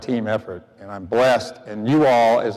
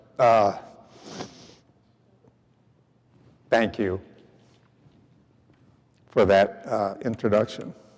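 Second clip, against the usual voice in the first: choked-up voice, thick with emotion; 4 dB quieter than usual. Thanking Donna for the introduction, choked up. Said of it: "I'm choked up".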